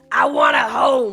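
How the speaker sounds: booming, very loud, slow, drawn-out Bronx accent. Voicing a Pokemon in a game, Squirtle Bronx voice. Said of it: "I gave Squirtle a Bronx voice".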